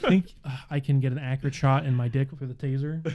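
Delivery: ordinary delivery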